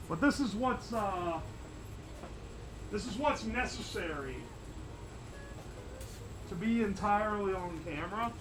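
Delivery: muffled voice. Speaker helmeted up on camera, muffled voice. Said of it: "which is why I sound muffled".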